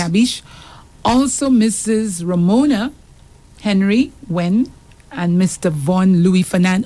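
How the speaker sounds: ordinary talk, nothing marked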